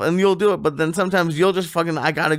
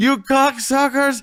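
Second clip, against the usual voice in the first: high, raised yelling outburst; 9 semitones higher than usual. Retelling how a friend yelled at the cops: retelling a yell at cops. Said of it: "started yelling at the cops".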